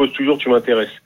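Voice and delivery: ordinary talk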